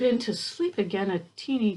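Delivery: plain reading voice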